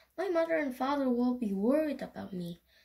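ordinary delivery

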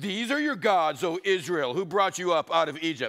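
dripping, scornful, mock-solemn, sarcastic put-on voice. Retelling the golden calf story, put-on sarcastic God voice. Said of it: "That's my God sarcastic voice".

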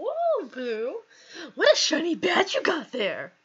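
overdone, high, swooping voice. Voicing a game character who greets the player: overdone Scott voice. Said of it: "I am trying way too hard to imitate Nessa Scott voice".

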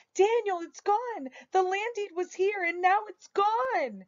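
very high shout, "gone" drawn out. Narrator reading the speaker jumping up from a chair, calling to Daniel; shouted. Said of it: "I jumped up from my chair and shouted".

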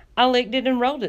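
proud, boastful voice, pitched slightly up. Sweetie tells the others what she did with the shoe, proud. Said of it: "said Sweetie proudly".

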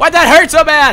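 high-pitched, loud, frantic yelling.

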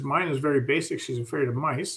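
ordinary delivery

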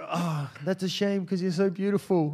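put-on New Zealand accent. Retelling what he said after she turned down his offer of a ride, Kiwi accent. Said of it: "I don't know why he's got a Kiwi accent".

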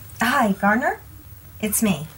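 very slow, drawn-out, hushed half-whisper. Retelling a scene where a woman phones someone with a man two feet away, half-whispering. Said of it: "And like whispers".

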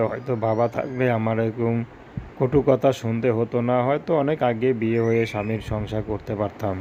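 ordinary delivery

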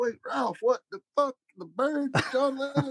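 disbelieving outburst.

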